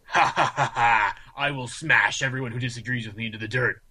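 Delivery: put-on evil villain voice. Mocking the idea that these guys openly boast, in a loud evil villain proclamation. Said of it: "loudly march around stating".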